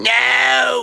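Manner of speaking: very high, rough, raspy, drawn-out put-on smoker's voice. Describing how she would answer quiz questions: her cigarette voice. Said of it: "with her cigarette voice".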